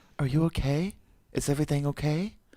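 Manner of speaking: worried, concerned, fretting mother voice. Showing their range of female voices, put-on concerned mother voice. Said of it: "And then Concerned Mother".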